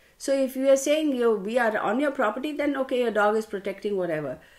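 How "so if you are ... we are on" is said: plain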